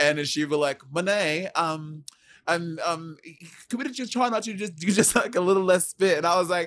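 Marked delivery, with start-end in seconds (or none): 0.9-6.2 put-on halting, high-pitched British accent with ums. Retelling what a co-actor said about spitting: imitating Courtney in British accent. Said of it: "why is Courtney British now?".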